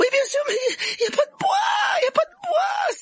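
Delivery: very high, rising, crying voice. Narrator reads a character answering a friend caught by a plant, crying out. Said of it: "s'écria Hermione en se tordant les mains".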